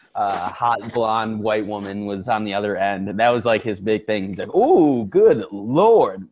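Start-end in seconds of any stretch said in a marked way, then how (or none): 4.5-6.1 loud, swooping awestruck gasp, "Lord" drawn way out. Retelling how a movie police chief reacts on seeing someone: imitating a surprised police chief. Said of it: "Not surprised with what's going on".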